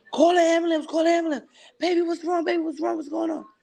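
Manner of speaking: mock frantic, panicked shrieking, very high. Retelling screaming out to the kids for help: retelling a panicked scream. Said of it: "I'm screaming out to my kids".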